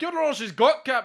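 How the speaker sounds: bad Scottish accent, shrill, high and belted. Joking about a character who should have a Scottish accent, the speaker does a Scotty impression. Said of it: "I'm not very good at it".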